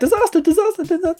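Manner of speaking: frantic, panicked, very high-pitched yelling. Describing the rabbit running past in the wood, the speaker voices Rabbit yelling disaster. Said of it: "yelling the word disaster".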